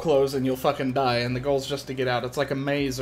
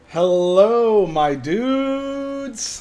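loud wrestling ring announcer call, dudes drawn out; 8 semitones higher, 5 dB louder than usual. Opening a friday night stream, greeting viewers in a wrestling announcer voice. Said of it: "I sound like a wrestling announcer".

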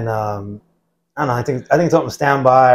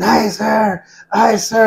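mock scream, very high, very slow, drawn-out, rough; 9 semitones higher than usual. Retelling a boot camp story, imitating Matlock screaming. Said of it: "he was right there screaming".

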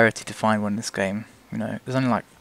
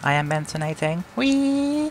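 high, slow car voice, "whee" drawn out; 7 semitones higher than usual. Giving the car a voice while driving: Crown car's voice. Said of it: "that's the Crown's voice now".

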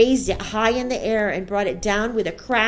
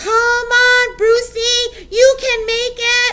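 very high, loud, very slow drawn-out cheering shout; 13 semitones higher, 7 dB louder than usual. Someone in the audience cheering on a boy in a contest, shouting. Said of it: "someone shouted".

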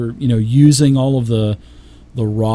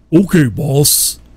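grunting orc voice, pitched higher; 4 semitones higher than usual. Narrating a scene where an orc answers its boss, grunting orc voice. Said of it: "a couple of orcish grunts say".

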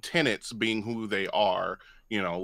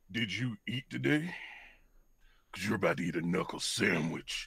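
full, rough growling voice throughout; 2 semitones lower, 8 dB quieter than usual. Voicing Haskell threatening someone, as asked by the game master: Haskell's growl. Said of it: "can we hear it in Haskell's growl".

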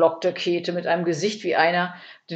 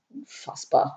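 indistinct, soft, half-whispered mumbled mutter; 3 semitones lower, 5 dB quieter than usual. Narrator reads Ede's reply to Käthe's complaint, mumbled. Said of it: "nuschelte Ede".

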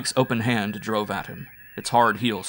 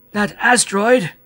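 scared, frightened, very high-pitched rising tone; 11 semitones higher, 7 dB louder than usual. Reading the Martian character's line, in a frightened voice. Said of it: "repeated the Martian in a frightened voice".

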